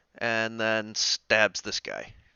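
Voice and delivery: ordinary talk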